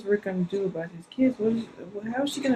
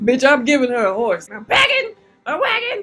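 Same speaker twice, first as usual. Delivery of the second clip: raised, loud, announcing character voice; 4 semitones higher, 8 dB louder than usual. Reacting to a scene, voicing what Nat is thinking: imitating Nat. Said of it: "He's like".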